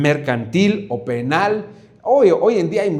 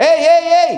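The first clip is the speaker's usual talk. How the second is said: loud, high calling shout, hollered out; 14 semitones higher, 6 dB louder than usual. Explaining what giving voices means, the speaker demonstrates calling out, shouting. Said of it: "está gritando".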